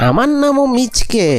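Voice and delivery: ordinary talk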